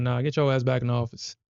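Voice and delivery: ordinary talk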